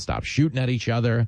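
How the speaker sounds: plain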